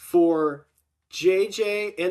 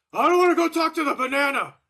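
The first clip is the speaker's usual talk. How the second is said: mock loud voice, pitched up, carrying far; 8 semitones higher than usual. Retelling what J J said near the banana: imitating J J saying it loudly. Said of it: "she says it very loudly".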